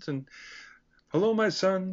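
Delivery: high, pleasant frog-puppet voice. Recalling the actor who played the priest, doing his pleasant Kermit-like voice. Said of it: "He had sort of a Kermit the Frog type of a voice".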